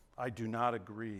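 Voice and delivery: very hushed, deep, slow, drawn-out under-the-breath muttering. Speaker showing how people murmur things under their breath: muttered under breath. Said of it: "Right under your breath".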